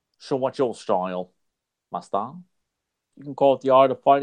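put-on Australian accent. Voicing a two-person skit about fighting styles, in an australian accent. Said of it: "I guess you could say Australian".

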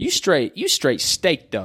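put-on New York-accented speech. Imitating what they say, slang phrases: East Coast New York accent. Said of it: "that's my East Coast kinda New York accent".

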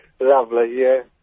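low, insincere, unconvincing, going-through-the-motions tone. Responding to another presenter mentioning rose petals at their wedding: insincere. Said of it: "Can you sound a bit more sincere?".

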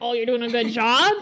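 ordinary talk, nothing marked

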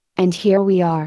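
plain

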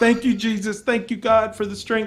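mock tearful thanks. Retelling how she thanked god at the top of the hill, imitating her crying. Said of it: "She was like crying".

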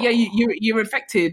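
ordinary talk, nothing marked

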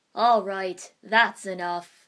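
very loud, deep, booming, stern admonishing voice. A summoned tortoise breaks in, speaking in a deep booming tortoise voice. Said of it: "the deep booming voice of a tortoise admonished".

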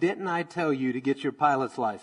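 ordinary talk

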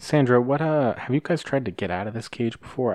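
discreet, confidential delivery. Game character asking another captive in the cage, a little on the quiet side. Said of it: "I say this a little on the quiet side".

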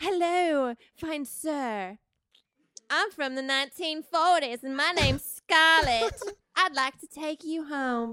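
put-on high-pitched, old-fashioned 1940s Southern belle voice. Scarlett sashays across the bar room to a man, 1940s Southern voice. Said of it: "Southern in the 40s".

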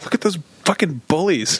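acted, riled-up, hateful, very angry griping. Retelling complaining to a roommate about some guys: imitating own angry complaint. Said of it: "I just was really angry".

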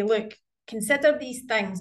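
ordinary talk, nothing marked

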